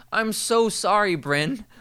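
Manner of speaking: mock very loud, very high, drawn-out voice. Acting out an example, apologizing to Bryn, said very loudly. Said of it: "says very loudly".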